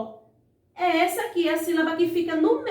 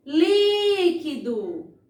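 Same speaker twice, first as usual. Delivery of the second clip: first syllable li of líquido held out long. Portuguese stress lesson, calling out líquido with long stretched first syllable li. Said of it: "eu demorei bem mais na sílaba li".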